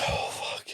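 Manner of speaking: soft frightened whisper. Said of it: "I'd be driving and be like".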